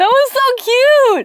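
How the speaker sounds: tearful, crying voice while talking. Reacting to a touching story just told, crying while talking. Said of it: "You okay?".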